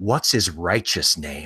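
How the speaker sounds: dead serious, earnest tone. Retelling a TV scene where a hero questions an arrested kid: imitating MacGyver being earnest. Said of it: "completely earnest, as though he talks like this every day".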